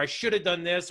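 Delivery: ordinary delivery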